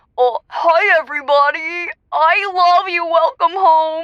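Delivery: slow, drawn-out voice of a talking dog. Showing the voice used when pretending the dog is a person: Chester voice. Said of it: "I do this really good Chester voice".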